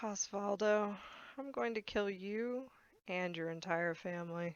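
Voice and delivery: very soft, hushed, calm, even, businesslike tone. Threatening an enemy in character during a fight: very calm and matter-of-fact. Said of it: "she says this very calmly and matter-of-factly".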